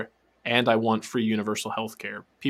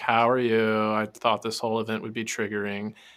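put-on detached, disinterested tone. Quoting a woman at an event, imitating her detached tone. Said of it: "detached, like, disinterested tone to her voice".

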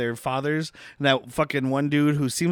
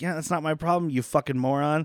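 ordinary talk, nothing marked

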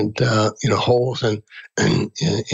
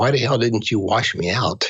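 whispered words. Retelling passing a fellow prisoner's cell: retelling a whisper. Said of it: "I whispered to him".

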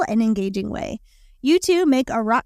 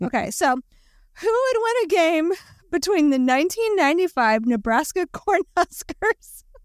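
much slower, laughing while talking, unable to stop; 6 semitones higher than usual. Reading out a matchup question after seeing a name, laughing while talking. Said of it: "now I can't stop laughing".

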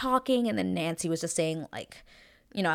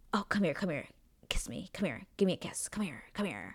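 fake, contrived, cheesy flirty tone; 9 dB quieter than usual. Complaining about guys who ask for kisses, mocking guys' contrived come-on. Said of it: "I cannot stand whenever I hear guys go like".

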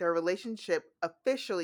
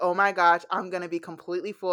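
put-on excited voice, louder; 7 dB louder than usual. Retelling a book scene where Lily receives a surprise gift: imitating excited Lily. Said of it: "Lily is so excited".

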